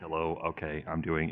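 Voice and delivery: very soft-spoken, timid, low and quiet voice. Recalling how they first spoke into the mic as a beginner, imitating really soft-spoken talk. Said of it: "you talk like really soft spoken".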